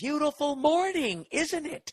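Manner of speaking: mock, very high, slow, drawn-out sarcastic yell. Retelling how the old guy downstairs called out from his window; imitating an old man yelling. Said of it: "why is he yelling with that twisted up look".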